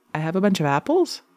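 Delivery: rising pitch at the end on apples. Showing how some people talk on the upbeat, rising pitch at end on apples. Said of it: "they talk on the upbeat. ... The inflections are up".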